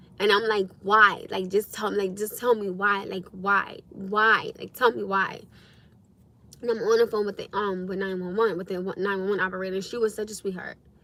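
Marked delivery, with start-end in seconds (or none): 0.8-5.4 mock furious, angry, begging, pleading tone. Retelling watching a son shake, asking why: retelling own angry plea. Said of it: "I'm angry because I'm seeing my son go through this".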